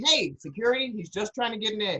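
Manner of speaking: normal talking voice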